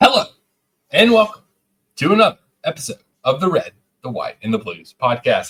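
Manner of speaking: energetic, pumped-up, high, swooping show-host voice. Podcast host opens the episode, trying to get energy up, in a pumped-up intro voice. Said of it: "I don't know why I'm talking like this".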